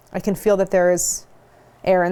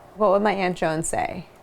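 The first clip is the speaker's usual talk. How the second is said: ordinary delivery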